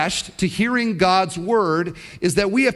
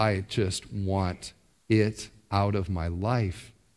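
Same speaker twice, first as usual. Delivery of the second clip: put-on killer tone, lower, quieter, slower; 7 semitones lower, 6 dB quieter than usual. Retelling how a man spoke about hating his sin: imitating a killer's tone. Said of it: "like a killer would say something".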